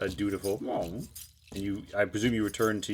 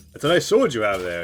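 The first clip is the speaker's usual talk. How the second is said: put-on very loud, belted Greek accent; 8 dB louder than usual. Narrating a scene and voicing Gregorio speaking to Yami, in a Greek accent. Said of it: "what's my Greek voice?".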